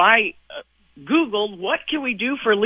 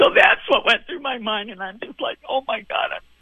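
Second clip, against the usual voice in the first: tearful crying voice. Speaker recounting a story to a listener, crying. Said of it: "Are you crying again right now?".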